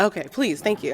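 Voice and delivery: saucy, sassy, cheeky little retort. Answering a promise to make patients wait next time: sassy. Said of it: "that was a very, very sassy, sassy comment".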